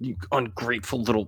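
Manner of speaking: muttered under breath. A storyteller voices a character reacting to the listener, mumbled under his breath. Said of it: "he kind of mumbles under his breath".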